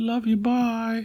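squeaked out, very high-pitched. Saying goodbye to viewers in an imitation: Hannah impression. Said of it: "That was my best Hannah impression".

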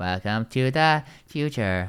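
strange, weird, mechanical robotic voice. Describing a woman at a party who kept talking like this: super weird robot voice. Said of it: "doing this super weird robot voice all the time".

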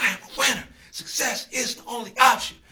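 soft-spoken but passionate. Showing how to say a morning affirmation: passionate but not loud. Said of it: "you can still be passionate without being so loud".

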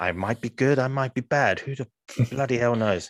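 mock mysterious seductive voice. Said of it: "like a femme fatale sort of thing, very mysterious".

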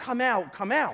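ordinary delivery

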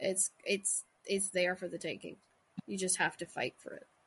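ordinary talk

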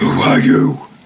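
rough, ferocious, snarling wild creature growl. A beast in a lurching wagon answers a would-be friend, in a growling voice. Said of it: "it sort of just growls".

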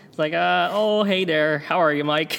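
loud, put-on Minnesota accent. Practicing accents with a co-speaker, Minnesota accent. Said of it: "kinda working on a, a little bit of a Minnesota accent".

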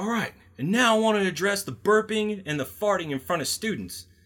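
very high-pitched, hard, all-out yell. Retelling a man addressing a room of people, retelling a hard yell. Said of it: "he's yelling so hard that his face is red".

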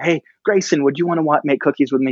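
put-on shouted yell. Retelling calling out to their daughter grayson, retelling a shout. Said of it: "So I yelled at my daughter".

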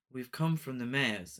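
imitated flat, lifeless tone. Mocking a film's voice acting: imitating lifeless voice acting. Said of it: "the rest of the delivery stand out".

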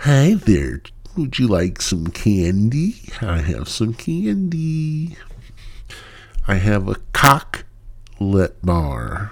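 put-on sing-song creepy old-man voice. Show host opening the show, doing a creepy old pervert voice. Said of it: "like an old perverted man".

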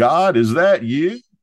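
put-on loud, high, tipsy drunken holler. Telling a fishing story, acting out a friend hollering back at a voice, retelling a drunken holler. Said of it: "my friend hollers back".

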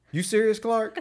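play-acted dead serious tone. Retelling a favorite movie quote as Eddie, dead serious. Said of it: "as serious as he can be".

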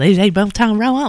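put-on sarcastic voice. Showing how a TV character says the phrase: imitating Suzanne, mock sarcastic. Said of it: "that's how Suzanne says".

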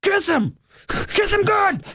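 very high, drawn-out heckling holler. Retelling yelling at fighters in a bar: imitating own yell. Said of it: "I like to just yell out".

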